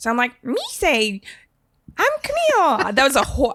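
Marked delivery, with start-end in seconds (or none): 0.4-2.9 goofy, high, swooping, sing-song creature voice. Showing how she talked as a kid to annoy her sister: Jar Jar impression. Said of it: "my impression of young Camille doing a Jar Jar impression".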